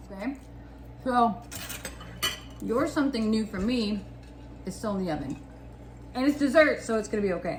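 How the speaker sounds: muffled, speaking while chewing food. Speaker eating and chatting on Valentine's Day, talking with mouth full. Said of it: "I'm talking with food in my mouth".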